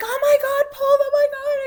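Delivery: shrill, thrilled, very high, very loud excited cry. Retelling how she cried out during an exercise session: imitating an excited cry. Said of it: "I heard her cry out".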